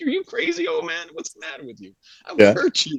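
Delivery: very high, swooping, teasing, half-joking, playful tone. Retelling a fight, imitating own teasing mock threat. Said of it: "I'm just messing with him".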